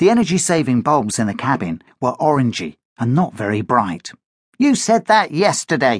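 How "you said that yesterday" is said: sulky grumbling, higher pitched. Danny replies to Josh's hopeful remark, grumbling. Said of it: "grumbled Danny".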